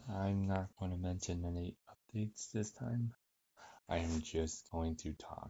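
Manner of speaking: composed, unhurried, calm and collected host tone. A podcast host opens his episode, calm and collected. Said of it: "I am speaking in my calm and collected voice tone".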